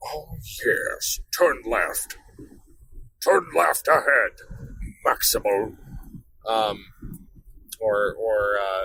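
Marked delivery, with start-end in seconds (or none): 0.0-5.8 villainous robot character voice. Showing a navigation line to record for the Garmin: Megatron voice. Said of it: "myself doing Megatron's voice".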